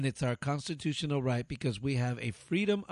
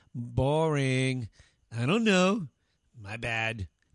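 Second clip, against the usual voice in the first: put-on teenager-style slang delivery; 4 dB louder than usual. Reading a list of banned expressions, the speaker says them like a teenager. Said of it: "Notice how I'm saying it like a teenager?".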